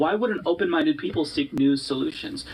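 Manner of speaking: ordinary talk, nothing marked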